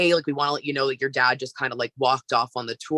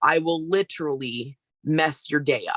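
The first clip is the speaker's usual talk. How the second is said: put-on calm, firm, authoritative voice. Retelling a warning to a coworker: retelling calm authoritative warning. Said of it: "super calm, but very authoritative".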